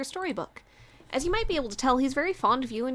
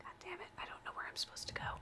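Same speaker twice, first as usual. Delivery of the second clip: whispered, higher and quieter; 6 semitones higher, 19 dB quieter than usual. Playing a game, unsure where to go next: whispering. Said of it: "Why am I whispering?".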